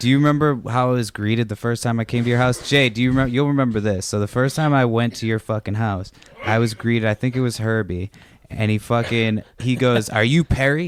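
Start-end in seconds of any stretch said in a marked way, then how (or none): 10.1-10.9 put-on menacing, threatening, ready-to-fight tone. Speaker recalls being greeted at the listener's house, asked in a mock-menacing way. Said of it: "he says it like he's going to fuck me up".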